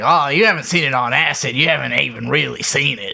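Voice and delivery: pushy, insistent put-on voice. Retelling how an uncle kept insisting on something: imitating Uncle Johnny. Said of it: "My Johnny impression".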